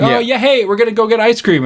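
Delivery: high, wooden, unnatural, stilted line reading. Retelling a movie scene's dialogue: imitating stilted unnatural dialogue. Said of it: "they're talking like two people never talk".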